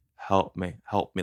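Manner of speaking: put-on gurgling, guttural whisper. Retelling a victim's words at the scene, imitating a gurgling whisper. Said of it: "a gurgling whisper coming from her mouth".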